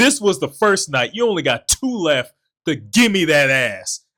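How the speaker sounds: mock furious, fed-up scolding, loud and high-pitched. Retelling a man's words to the speaker, mock-angry retelling. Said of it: "he was so mad he deducted a night".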